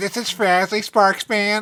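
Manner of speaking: put-on gnome character voice, annoying. Introducing one of the speaker's gnome characters: Frasley Sparksman gnome voice. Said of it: "This is one of my gnome voices".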